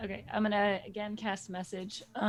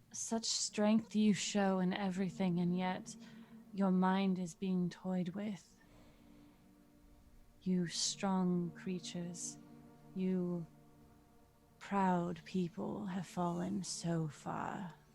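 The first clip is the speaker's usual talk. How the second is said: whispered, much quieter; 4 dB quieter than usual. Speaking to one of three members while the other two stare, whispering. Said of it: "the other two that you're not whispering to".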